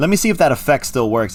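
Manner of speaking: ordinary talk, nothing marked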